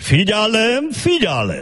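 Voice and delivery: high, slow, bumbling announcer voice.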